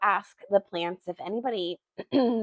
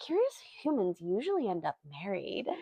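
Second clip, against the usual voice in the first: hushed, swooping voice with each word drawn out; 9 dB quieter than usual. Retelling a story, a character answers questions about Yarrow, Dendi's long drawn-out voice. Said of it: "his long drawn out voice".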